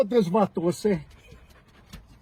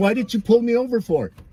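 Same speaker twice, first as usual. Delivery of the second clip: plain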